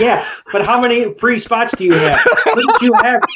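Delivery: heated, angry, high-pitched. Retelling own reaction while watching an episode: imitating own angry reaction. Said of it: "I was so mad".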